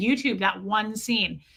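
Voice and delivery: ordinary talk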